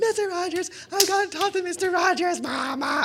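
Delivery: very high, frantic pleading. Retelling begging Mama to let him talk to someone, acting out frantic pleading. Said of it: "I'm like losing it".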